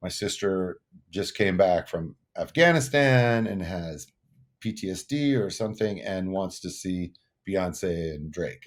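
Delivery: ordinary talk, nothing marked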